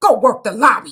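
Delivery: loud, snapped, barked delivery.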